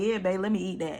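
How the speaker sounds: ordinary delivery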